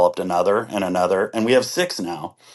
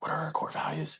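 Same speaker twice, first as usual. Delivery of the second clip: hushed, very quiet whisper; 7 semitones higher, 13 dB quieter than usual. Retelling how a man whispers to his wife: retelling a whisper. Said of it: "He like whispers to her".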